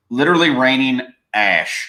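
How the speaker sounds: deliberate, slow, careful delivery, word by word. Talking with others about conditions where she lives; said slowly, carefully. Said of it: "I had to say that slow".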